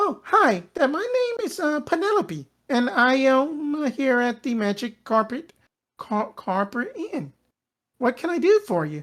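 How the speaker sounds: put-on cheerful, bubbly, high, sing-song girl voice. Voicing an innkeeper greeting the party at shift change: bubbly halfling girl voice. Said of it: "bubbly halfling girl just comes in".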